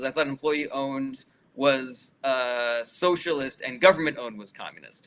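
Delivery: ordinary talk, nothing marked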